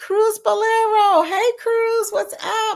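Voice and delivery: very high, bright, excited call-out.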